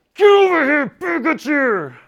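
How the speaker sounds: shrill, very high, very loud angry-parent yell. Explaining Matthew's verse, demonstrating a parent saying it with anger, angry parent voice. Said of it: "He doesn't say it with anger".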